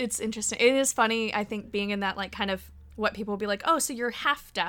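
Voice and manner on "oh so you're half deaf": ordinary talk, nothing marked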